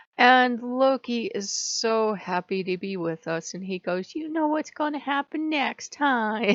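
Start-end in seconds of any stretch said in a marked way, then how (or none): 4.1-6.6 high, giggly, gleeful, cheering excited voice. Retelling a tiny safari game, voicing Loki's question in the Loki voice. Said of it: "And I'm doing the Loki voice".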